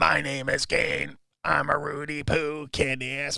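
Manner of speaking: flat, very slow voice-box drone. Suggesting a bit where he talks through a voice box: Kane voice-box voice. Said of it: "because he always talks with the voice box, where you go".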